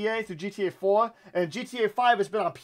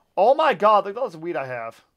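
ordinary talk

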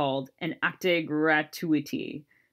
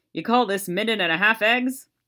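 put-on dry, wry delivery, pitched up; 5 semitones higher, 4 dB louder than usual. A man holds up his fork and speaks to the waitress: dry delivery. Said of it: "say to the waitress dryly".

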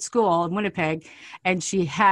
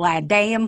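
put-on French spoken with an English accent; 2 semitones higher than usual. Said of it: "said it like an English person that's just going".

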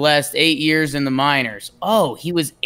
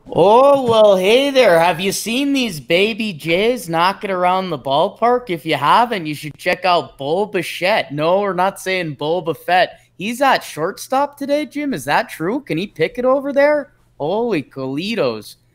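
over-the-top, exaggerated Canadian accent; 4 semitones higher than usual. Asked to give the Blue Jays lineup: exaggerated Canadian accent. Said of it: "can you give it to us in your best Canadian accent?".

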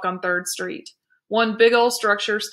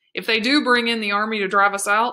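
ordinary delivery

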